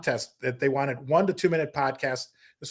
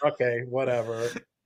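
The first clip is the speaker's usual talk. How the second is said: mock resigned tone, lower and quieter; 3 semitones lower, 5 dB quieter than usual. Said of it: "like he was just resigned to just".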